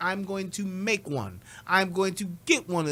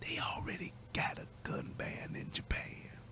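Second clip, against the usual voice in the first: breathy, barely-there hushed whisper; 5 semitones higher, 13 dB quieter than usual. Speaker announces whispering this one too: whispered. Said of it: "I'm gonna whisper this one too".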